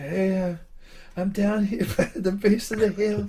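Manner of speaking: put-on pitiful little voice. Retelling the call someone else remembers him making from the hill's base; imitating his own pitiful call. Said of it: "I must have been pitiful".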